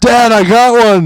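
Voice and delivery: loud, slowed call.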